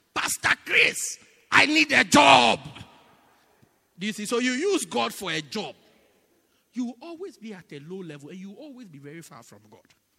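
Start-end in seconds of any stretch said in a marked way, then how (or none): 0.2-2.6 booming, drawn-out, very slow, rough, very loud shout. Retelling how someone in traffic called to the bishop: imitating someone shouting. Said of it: "he shouted".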